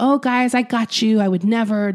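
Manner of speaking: tender, gentle, soothing, coaxing tone. Quoting a man's voicemail to people whose money he took, imitating his gentle voice. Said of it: "in his, like, gentle voice being like".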